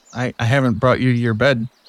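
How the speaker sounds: usual speaking voice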